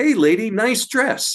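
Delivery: tiny, squeaky, very high male voice. Retelling a voice heard at the fort, doing a little male voice. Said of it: "this little male voice say".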